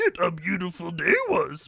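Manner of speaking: swooping, sing-song, wise sage character voice. Reading a line after being asked for a Yoda impression: Yoda impression. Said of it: "in your Yoda impression?".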